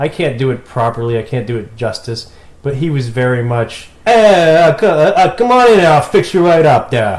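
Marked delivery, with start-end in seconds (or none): 4.1-7.2 put-on booming, very loud, slow, thick Brooklyn accent. Quoting the guy in a New York pizza shop: thick Brooklyn accent. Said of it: "He had the accent".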